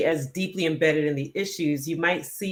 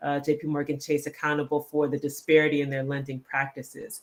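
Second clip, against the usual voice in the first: usual speaking voice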